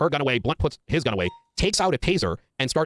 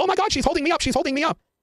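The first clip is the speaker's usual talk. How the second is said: mock high-pitched, frantic, panicked scream; 13 semitones higher than usual. Recounting a confrontation, quoting a man who put down his taser: retelling a panicked scream. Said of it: "starts screaming".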